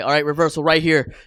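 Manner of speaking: loud open call. Describing a wrestler calling moves during a match: imitating John Cena speaking loud. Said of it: "actually has a reputation of speaking loud throughout a match".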